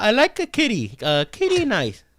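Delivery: high voice with swooping pitch. Doing the second impression for a guessing game: Anderson Silva impression. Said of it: "So Anderson's the second one?".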